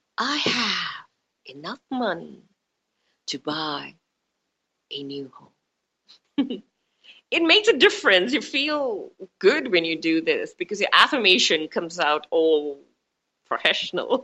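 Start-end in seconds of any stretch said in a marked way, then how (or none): 0.2-6.7 low, very slow, measured coaching teacher voice. Demonstrating a money affirmation to listeners, in a manifestation teacher voice. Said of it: "you sound like a teacher".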